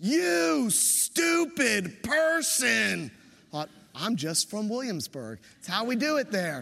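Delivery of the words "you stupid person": mock vigorous, angry, high, rough shout. Retelling what a van driver shouted at them in the crosswalk, retelling a vigorous yell. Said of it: "he shouts with quite a vigorous yell".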